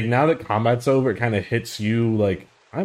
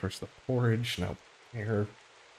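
very quiet under-the-breath mutter; 10 dB quieter than usual. Voicing Gwen's aside when bear is offered for breakfast: muttering under her breath. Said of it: "under her breath goes".

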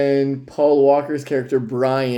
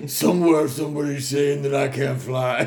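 mumbled put-on voice with swallowed words; 3 dB quieter than usual. Speaker tries their best mumble talk, admitting it isn't very good: mumbled put-on voice. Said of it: "That's my best mumble talk".

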